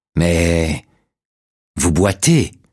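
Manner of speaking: wheezing, hissing voice with whistling breath. A narrator reads Dutch's reply to Barrett, in a wheezing voice. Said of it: "dit Dutch d'une voix sifflante".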